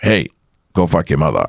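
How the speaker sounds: plain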